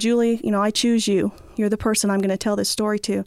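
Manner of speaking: plain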